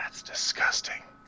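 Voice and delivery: whisper. Player voicing Dice, looking to Aerodon, in a whisper. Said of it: "look to Aerodon and just whisper".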